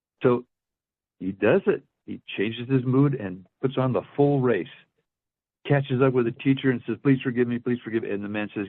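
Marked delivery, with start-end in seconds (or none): 7.0-8.1 put-on pleading, begging voice. Retelling a man chasing after a teacher for forgiveness: imitating someone begging. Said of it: "run after this guy and beg his forgiveness".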